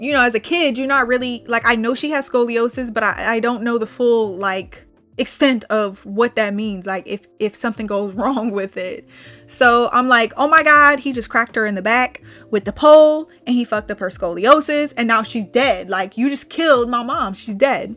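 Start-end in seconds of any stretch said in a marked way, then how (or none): none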